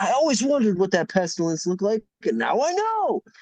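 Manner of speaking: acted, giddy, very high, swooping excited rush. Retelling a bar regular talking about his Pestilence card: imitating excited Curtis. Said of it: "all excited about that".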